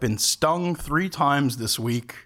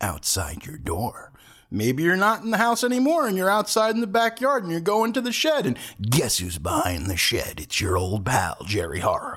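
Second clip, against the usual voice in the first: taunting, sing-song, high horror-movie slasher voice; 6 semitones higher than usual. Addressing listeners in a spooky bit, say it in a slasher killer voice. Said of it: "I really like doing that voice".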